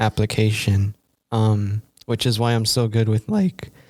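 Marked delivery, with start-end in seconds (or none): 2.1-3.7 voice cracking. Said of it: "Welcome to Voice Crack City".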